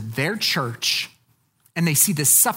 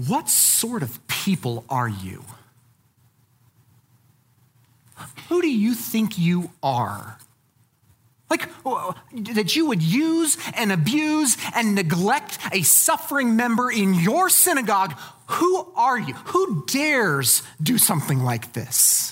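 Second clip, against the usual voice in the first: mock furious, cutting, angry, scathing tone; 4 semitones higher than usual. Showing how Jesus rebukes the Pharisees in scripture, acting out angry Jesus. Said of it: "this is an angry Jesus moment".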